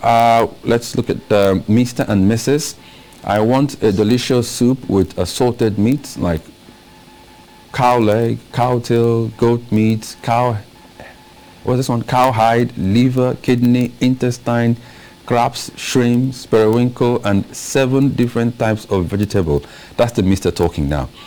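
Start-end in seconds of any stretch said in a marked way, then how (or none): none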